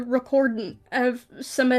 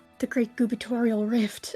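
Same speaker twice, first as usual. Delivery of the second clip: muttered line; 4 dB quieter than usual. Voicing a character who gives the event a name: said under his breath. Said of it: "Sumner just says under his breath".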